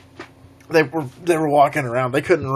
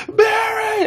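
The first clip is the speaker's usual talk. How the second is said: very high, loud scream. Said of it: "I was, like, screaming the whole time".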